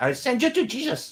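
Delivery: very high voice, poorly done Chinese accent. Trying a bad Uncle Roger impression: bad Uncle Roger accent. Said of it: "I tried to imitate Uncle Roger".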